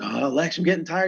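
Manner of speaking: acted, high-pitched yelling. Retelling shouting to a buddy while pushing a cart: imitating own past yell. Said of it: "I'm yelling to him".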